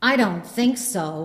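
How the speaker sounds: put-on, quite loud, carrying voice. Retelling a lady's reply as she approaches: imitating someone saying it loudly. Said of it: "she says quite loudly".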